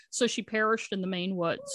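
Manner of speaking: normal talking voice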